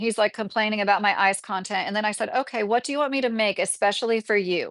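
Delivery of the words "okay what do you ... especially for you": sarcastic tone, higher pitch. Retelling an online argument with a commenter: retelling own sarcastic remark. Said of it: "I was just being real sarcastic like that with him".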